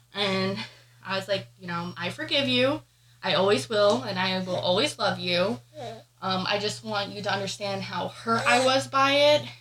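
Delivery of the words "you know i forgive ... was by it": usual speaking voice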